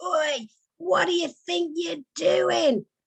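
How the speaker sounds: very high, shrill, drawn-out fishwife holler. Retelling shouting out the bedroom window at an intruder: retelling a fishwife-like shout. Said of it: "Like some fishwife".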